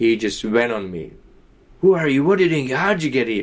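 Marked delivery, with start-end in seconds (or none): 1.8-3.4 put-on South African accent with raised pitch. Retelling a manager's questions at a fire exit: imitating a south african accent. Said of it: "with his South African accent".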